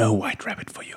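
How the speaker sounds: quiet close-up whisper. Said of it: "I whisper in her other ear".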